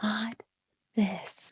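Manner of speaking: soft, hushed whispered aside.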